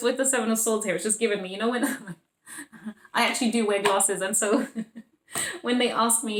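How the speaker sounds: speaking while laughing, words bubbling with giggles. Explaining a card while laughing, laughing while talking. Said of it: "I'm just laughing because".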